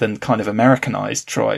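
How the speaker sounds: plain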